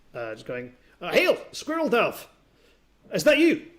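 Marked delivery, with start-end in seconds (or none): 1.2-3.6 put-on very high, loud young half-orc voice. Voicing a young half-orc calling out from the town: young half-orc voice. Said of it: "a young half-orc approaching".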